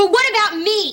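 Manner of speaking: very high-pitched, loud shouting. A teen protests after Grandpa refuses to take their side, shouting. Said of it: "Don't shout".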